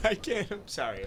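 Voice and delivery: very quiet, drawn-out giggle through words. Apologizing for laughing while another speaker is talking: laughing while talking. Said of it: "What are you laughing at?".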